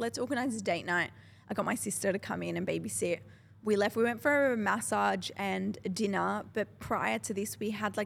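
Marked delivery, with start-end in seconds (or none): none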